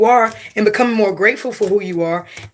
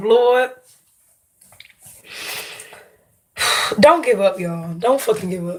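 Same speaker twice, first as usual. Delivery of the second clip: voice fighting back tears, close to crying. Speaking live to viewers: holding back tears. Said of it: "I'm about to fucking cry on this fucking live".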